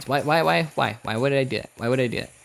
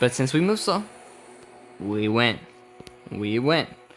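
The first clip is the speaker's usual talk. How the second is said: usual speaking voice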